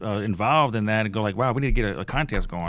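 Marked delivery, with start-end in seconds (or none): none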